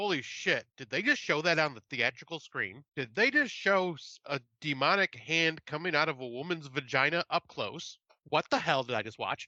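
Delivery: ordinary talk, nothing marked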